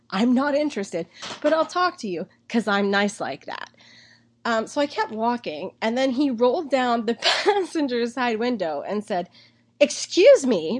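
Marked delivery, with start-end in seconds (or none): 9.8-10.8 loud call-out in a raised voice. Retelling how a man called out from his car window: imitating a very loud call. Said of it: "very loudly".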